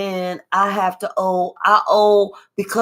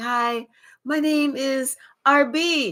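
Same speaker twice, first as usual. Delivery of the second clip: put-on sweet innocent voice, higher pitch; 5 semitones higher than usual. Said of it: "Looking all innocent and sweet".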